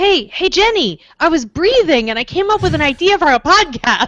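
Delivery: pitched right up to the top. Showing an impression of Tom Merritt: Tom Merritt impression. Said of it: "my impression of Tom Merritt".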